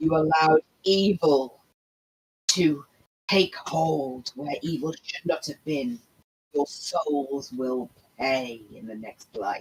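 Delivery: very low, menacing, foreboding voice. Casting a spell, the speaker voices a warning heard by three jerks, in an ominous voice. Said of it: "an ominous voice saying".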